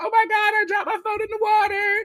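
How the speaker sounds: put-on very high, frantic, freaked-out panicked crying. Retelling how Riley dropped her phone in the water: imitating Riley freaking out. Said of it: "she's freaking out".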